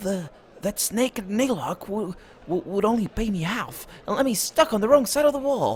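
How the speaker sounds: hushed undertone. A trader glances at a passing guard before speaking on, lowered voice. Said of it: "He glances at a passing guard and lowers his voice".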